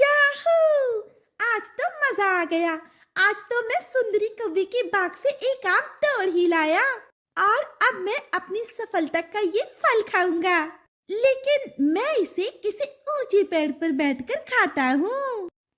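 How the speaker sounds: high, cheerful, triumphant little cartoon parrot voice. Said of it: "[name] तोता ये गीत गाते हुए अपने मुंह में आम का फल लिए जा रहा था। / तभी वो खुद से कहता है".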